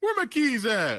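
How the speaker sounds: flustered, very high, shrill, very loud yell. The speaker presents an impression of his dad after he loses his keys: impression of dad. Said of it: "my impression of my dad after he loses his keys".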